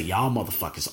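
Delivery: muttering under breath. Retelling a muttered remark about other people, retelling an under-breath mutter. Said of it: "I said under my breath".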